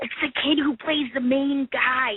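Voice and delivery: whispering. Retelling whispering into a companion's ear after spotting someone, whispering. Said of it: "I'm whispering in her ear".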